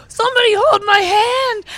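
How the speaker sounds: high, drawn-out, pleading pained cry. Retelling how a man with a broken leg screamed: imitating a screaming man. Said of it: "He's screaming".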